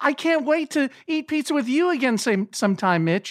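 smiling voice. Retelling what a friend said before the show, imitating Nick's smiling voice. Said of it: "such a smile on his voice".

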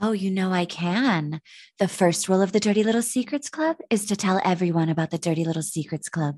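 put-on sexy, seductive voice. Asked to read a line from a note aloud, answering in a put-on sexy voice. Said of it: "You might put on the sexy voice".

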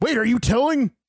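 startled, very high-pitched, surprised voice. Reacting to another speaker's remark about sharing: surprised voice. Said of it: "This is my surprise voice".

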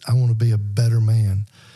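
ordinary talk, nothing marked

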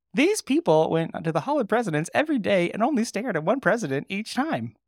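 very high, terrible put-on social-media narrator voice. Retelling a story about Hall of Presidents visitors, in TikTok voice. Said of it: "That's my TikTok voice".

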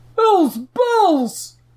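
shrill, very high-pitched yell. One of a group spots the inn's peacekeeper, shouting. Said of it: "one of the Nickel Rubbers shouted".

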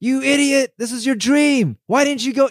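high-pitched put-on yelling. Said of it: "He's yelling at her".

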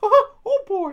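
belted out loud, very high and shrill. Showing off the Mickey Mouse impression just mentioned: Mickey Mouse voice. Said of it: "if I wanted to bust out my Mickey Mouse".

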